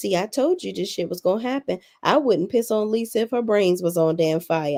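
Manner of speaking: ordinary delivery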